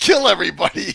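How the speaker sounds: high, loud, laughing speech. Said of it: "I'm sorry to laugh".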